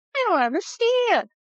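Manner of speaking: very high cartoon dog voice. Imitating how the undecided voters sound: voice of Barky the dog. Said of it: "that's the voice of Barky the dog".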